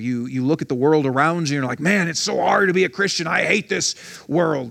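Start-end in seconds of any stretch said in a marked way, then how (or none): 1.8-4.7 put-on angry griping, rough and creaky. Acting out a quoted complaint about the world: mock angry voice. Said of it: "that's the angry voice".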